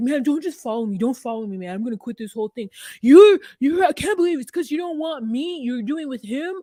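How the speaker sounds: loud, worked-up, hurt, upset outburst. Retelling a reality show scene, imitating someone upset. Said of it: "stomps around".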